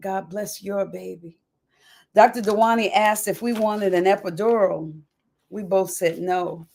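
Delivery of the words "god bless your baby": soft, hushed, barely audible half-whisper. Retelling blessing a pregnant nurse's belly: retelling a half-whisper. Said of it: "laid my hand on her belly and whispered".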